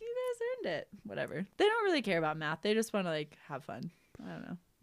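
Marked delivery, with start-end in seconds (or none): 0.0-0.9 high-pitched, soft delivery. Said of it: "I'm like".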